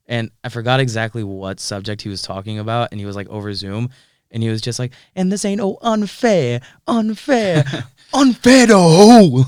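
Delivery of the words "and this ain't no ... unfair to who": put-on very loud, very high, thick drawn-out New York accent. Recalling a property law professor over Zoom, imitating his heavy New York accent. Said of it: "he had this heavy heavy New York accent".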